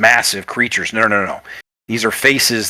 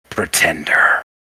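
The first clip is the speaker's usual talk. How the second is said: calm commanding voice, much lower; 6 semitones lower than usual. Narrating a scene, voicing an unseen voice across a battlefield, calm, commanding voice. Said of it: "speaks in this commanding tone".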